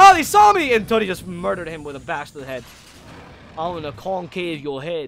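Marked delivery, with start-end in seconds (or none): 3.6-5.1 terrible, bad, put-on Australian accent. Game caster voicing a player's kill, in a terrible Australian accent. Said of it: "that was a terrible Australian accent".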